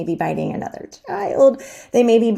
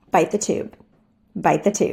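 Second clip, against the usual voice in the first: calm, steady, even, unemotional neutral tone. Demonstrating the prompt to give during the behavior, calm and neutral. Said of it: "as calm and neutral as possible".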